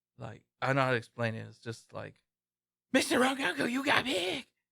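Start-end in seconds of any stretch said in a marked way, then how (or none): 2.9-4.4 very high voice going wild, all over the place. Explaining how an anime boy's voice sounds: Tanjiro voice going crazy. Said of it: "his voice is, like, something, like, it goes all crazy".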